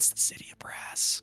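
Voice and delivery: close, quiet whisper. Voicing a character whispering an answer into someone's ear: whispering in someone's ear. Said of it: "you hear Alavar whisper in your ear".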